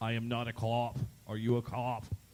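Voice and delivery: put-on Boston accent. Reading a true-or-false claim about a party argument, then using a Boston accent. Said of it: "in a Boston accent".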